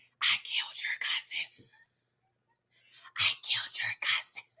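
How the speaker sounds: quiet, breathy whisper under the breath. Recapping a scene, quoting a line whispered to Henry: imitating Brian's whisper. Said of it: "Brian whispers to Henry".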